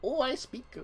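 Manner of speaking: put-on airs-laden British accent, pitched very high. Mocking how British accents sound, in a put-on British accent. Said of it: "Them British accents, they're all sexy times. They're all like".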